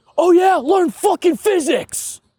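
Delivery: put-on very high, heated shout. Retelling a player yelling during a screaming match: imitating someone yelling. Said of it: "Crash just yells".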